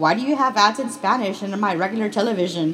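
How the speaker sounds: usual speaking voice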